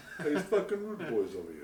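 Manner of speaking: put-on mix of Italian and Jamaican accents. Imitating Chet's Instagram stories: imitating Chet's Italian Jamaican accent. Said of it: "an Italian Jamaican".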